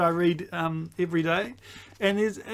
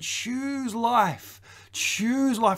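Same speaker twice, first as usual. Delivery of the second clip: slow, high, yearning, drawn-out longing tone; 5 semitones higher than usual. Voicing god urging people to choose life: imitating a longing plea. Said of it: "with longing in his voice".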